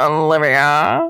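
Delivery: put-on old-timey nineteen-forties guy voice. Imitating how a co-host says her name: imitating Sean as a 1940s dude. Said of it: "sounds like a nineteen forties dude is saying my name".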